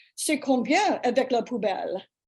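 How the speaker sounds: put-on French accent, said confidently. Retelling asking a taxi driver the fare, best French accent. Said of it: "in my best French accent".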